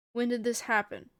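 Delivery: ordinary delivery, nothing marked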